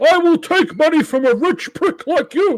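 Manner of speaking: very loud, shrill, high-pitched comic politician voice, shouted. Quoting a comedian's impression of a campaigning politician: Dana Carvey's Bernie Sanders impression. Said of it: "Dana Carvey's impre-, impersonation of Bernie Sanders".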